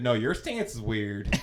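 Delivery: sassy clapback tone, woman's voice. Retelling a reply to a coach who called the stance weird: retelling a sassy lady voice.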